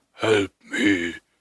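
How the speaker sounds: low, deep, otherworldly pleading voice.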